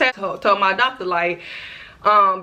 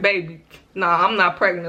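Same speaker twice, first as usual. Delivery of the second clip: normal talking voice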